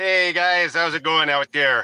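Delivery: put-on Brooklyn accent. A guest on the show gives a shout-out, imitating the 420 Scene guy in a Brooklyn accent. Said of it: "He sounds more like he's from Brooklyn".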